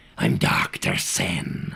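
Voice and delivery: very deep, rough, gravelly rasping voice. Explaining how to join a secret society of smugglers, in a gravelly voice. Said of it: "a bit of a gravelly voice. Like this".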